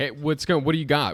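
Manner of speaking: calling out loudly. Calling out in character to a driver at a cart: yelling out. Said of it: "I yell out".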